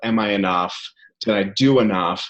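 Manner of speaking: ordinary talk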